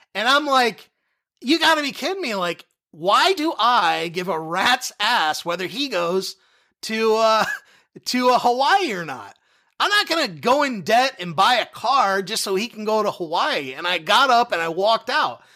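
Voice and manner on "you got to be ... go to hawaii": usual speaking voice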